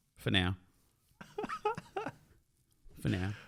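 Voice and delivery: depressed, soft, dejected, almost whispered. Conceding to the other podcast host, sounding depressed. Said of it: "you sound so depressed".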